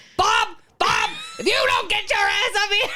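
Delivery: play-acted high, shrill, loud old woman holler. Retelling a husband calling contest, imitating an old woman screaming for her husband. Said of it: "just scream at their husbands".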